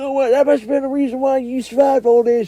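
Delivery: very high, loud, put-on countryman accent. Speaker acting out what others said to the new guy, country accent. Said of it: "I became a countryman all of a sudden".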